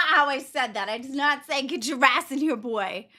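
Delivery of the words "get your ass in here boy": mock harsh, rough tone. Objecting to how the other retold the call: imitating a mocked harsh tone. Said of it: "That is not my tone".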